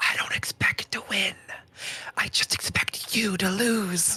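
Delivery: breathy, up-close whisper. Stabbing an enemy in the game, speaking in character: whispering. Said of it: "I'm gonna whisper".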